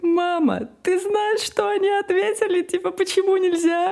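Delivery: mock very high child voice, words broken by laughter. A mother acts out her son telling her about kindergarten: imitating a child laughing while talking. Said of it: "он прям смеется и не может от смеха говорить".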